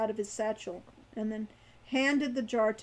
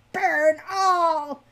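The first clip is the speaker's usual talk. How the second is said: shrill, very loud, hate-filled screech; 6 semitones higher, 9 dB louder than usual. Narrator voicing a captive creature crying out, shrill with hate. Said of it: "his voice shrill with hate".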